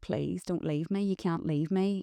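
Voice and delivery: desperate, tearful, crying tone. Recalling the morning he left for his first day of work, the speaker imitates their own crying plea. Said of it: "and I was just crying, going like".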